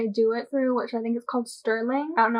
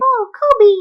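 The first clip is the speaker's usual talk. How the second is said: put-on squeaky small-child voice, very high and loud; 10 semitones higher, 10 dB louder than usual. Retelling how the interviewer acted as a student: imitating a little kid voice. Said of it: "a little voice, like".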